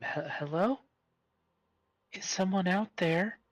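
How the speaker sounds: very high, frightened, sweet calling voice. Game narrator voices an unseen woman calling out, in a scared, sweet feminine voice. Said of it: "a scared, feminine, um, surprisingly sweet voice".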